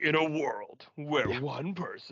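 put-on 90s old-school movie trailer narrator voice. Speaker recalling how they used to love movie trailers: 90s movie trailer voice. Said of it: "that 90s trailers voice".

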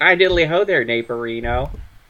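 cheery, sunny, neighborly cartoon-style voice. Showing an idea for the hundredth episode to the others, in a Ned Flanders voice. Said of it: "do like a Ned Flanders voice".

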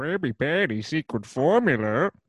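scheming, plotting cartoon villain voice. Asked to do a Plankton impression on the podcast, Plankton impression. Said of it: "Do your Plankton impression".

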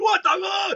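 shrieking, very high-pitched, shrill scream. Retelling being cut off by a screaming truck driver, re-enacting own scream. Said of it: "I was like screaming".

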